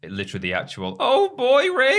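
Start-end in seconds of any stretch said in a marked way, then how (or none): 1.0-2.0 very high, loud, hesitant voice. Quoting a catchphrase while discussing a voice actor's delivery: Morty voice. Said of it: "that voice is the one that I'm a bit sick of".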